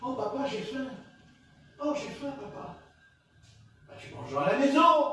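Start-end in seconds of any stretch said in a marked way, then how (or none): 0.0-2.8 put-on little kid voice. Acting out a child who tells his father he is hungry: acting a hungry child. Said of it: "Et le gosse, d'un coup, il dit".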